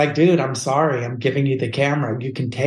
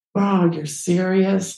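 mock stunned, crushed disbelief, high pitched; 5 semitones higher than usual. Retelling his reaction when told to just use the tripod, acting out being crushed. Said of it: "I just was crushed".

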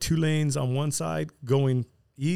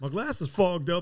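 put-on country-boy voice, higher; 4 semitones higher than usual. Retelling a friend's words after riding with fogged glass: imitating Rafa, country-boy voice. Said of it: "Like, country boy".

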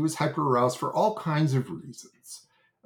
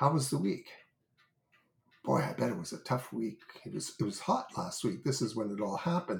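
hushed, very soft, gentle, kindly voice; 2 semitones lower, 7 dB quieter than usual. Recounting how he changed the subject with a man, retelling a soft, gentle voice. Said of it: "in a very soft, gentle voice".

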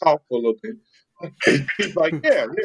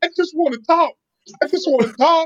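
mock, very high, screaming, insistent yelling; 13 semitones higher than usual. Retelling how a boy started yelling and screaming, imitating a child yelling. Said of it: "he just got to yelling and screaming".

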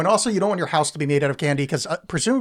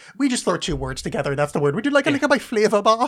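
put-on German accent with raised pitch; 6 semitones higher than usual. Mocking how Germans throw two words together: put-on German voice. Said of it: "that German thing of just like".

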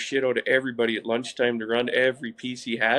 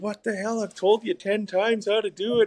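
high, furious, exasperated screaming; 9 semitones higher than usual. Recalling being nervous at the wheel, the speaker quotes the man who came over: retelling someone screaming. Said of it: "he just comes screaming at me".

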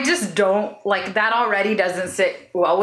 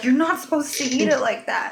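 mock appalled, affronted, scandalized, shocked disapproving tone; 4 semitones higher than usual. Teasing another speaker by acting out their reaction over food, imitating someone scandalized. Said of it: "You were like scandalized".

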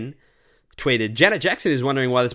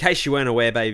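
normal talking voice

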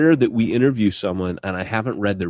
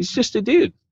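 much higher, mock casual offhand tone. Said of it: "you're just like".

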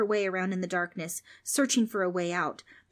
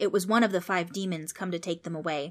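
ordinary delivery

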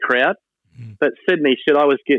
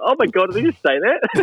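giggly, pitched-up, snickering disbelief; 8 semitones higher than usual. Retelling how a schoolkid reacts on hearing sledging, imitating snickering while talking. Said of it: "snickering away".

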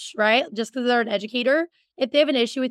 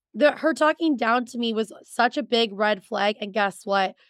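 ordinary talk

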